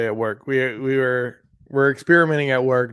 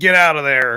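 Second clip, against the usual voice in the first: put-on raspy smoker voice, louder; 6 dB louder than usual. Picturing a bowling alley babysitter puffing a cigarette: raspy chain-smoking sitter voice. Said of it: "raspy voice".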